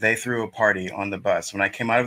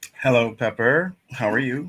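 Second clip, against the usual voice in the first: stiff, formal boardroom-style executive voice; 4 semitones higher than usual. Greeting the other person on the call, formal executive tone. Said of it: "stop sounding like you is at the executive uh".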